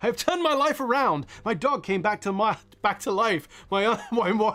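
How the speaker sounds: speech breaking up with laughter. Speaker reads a supporter's funny message aloud, laughing while reading. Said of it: "I'm laughing and I'm reading it".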